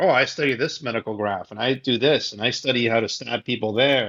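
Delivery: normal talking voice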